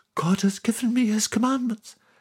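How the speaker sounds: feeble, weak voice pitched way up. A man near an asthma attack after carrying heavy stones, in a weak voice. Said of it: "he said with a weak voice".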